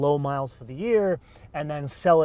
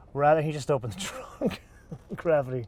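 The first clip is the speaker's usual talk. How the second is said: words broken up by laughter. Host reacts to an unexpected mishap during the episode, laughing while talking. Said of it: "I'm sorry, I'm laughing".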